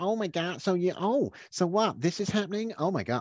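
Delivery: high, theatrical, over-dramatic American woman's voice. Complaining about a woman on a podcast, the speaker imitates an over-dramatic American woman. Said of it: "Because she's American and she's got this sort of like".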